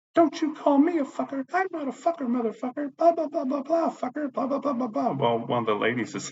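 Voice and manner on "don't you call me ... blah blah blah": put-on, shrill, very high-pitched screaming rant. Retelling a neighbour's rant in the elevator: imitating a woman screaming. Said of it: "that woman just yelling, screaming at me".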